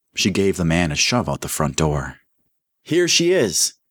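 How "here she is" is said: very high-pitched, loud shouted voice. Narrating a man calling out during a search for missing girls, yelled. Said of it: "Mike yelled".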